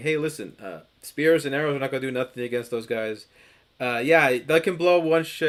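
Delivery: ordinary delivery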